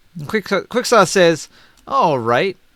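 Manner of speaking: ordinary talk, nothing marked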